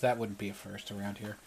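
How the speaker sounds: quiet mumble under breath. A storyteller voices a woman's aside as pirates snicker nearby, quietly mumbling under her breath. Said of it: "quietly mumbles under breath".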